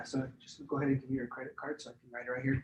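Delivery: very quiet confidential tone. Showing how to ask for a credit card confidentially: hushed, lowered voice. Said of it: "I can even lower my voice".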